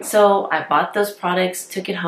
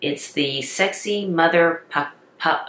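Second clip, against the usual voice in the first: very slow, careful, word-by-word. Reviewing lip plumpers, saying the product name really slow. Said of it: "I'm gonna have to say it really slow".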